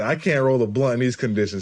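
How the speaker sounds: ordinary delivery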